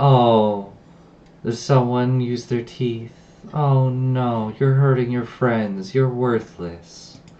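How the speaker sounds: slow, needling, jeering, mocking voice. Voicing a voice heard in a fight that taunts the players: taunting voice. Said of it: "Taunting the little".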